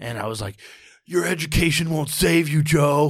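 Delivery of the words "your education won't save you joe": raised, pitched-up, furious yelled outburst. Retelling words once yelled at an older brother: imitating own past yell. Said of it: "I yelled that at him".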